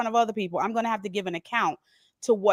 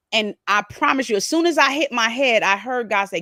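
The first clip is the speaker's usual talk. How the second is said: plain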